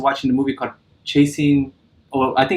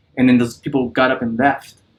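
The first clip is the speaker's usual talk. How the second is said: usual speaking voice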